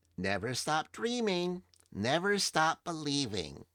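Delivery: very high, tiny, cute, tinny doll voice. Voicing a doll that speaks when picked up: little cute voice. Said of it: "you hear this little cute voice emanate out of it".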